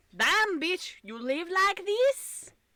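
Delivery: bad put-on Scottish accent, high and slow. Chatting with a co-speaker, trying a bad Scottish accent. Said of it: "I cannot do a good Scottish accent".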